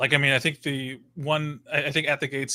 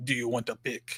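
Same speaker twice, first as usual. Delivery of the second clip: put-on over-the-top German accent, quieter; 6 dB quieter than usual. Retelling meeting a guitarist after his bar show, quoting him in a crazy German-sounding accent. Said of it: "just all crazy German sounding".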